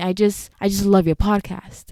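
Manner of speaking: ordinary talk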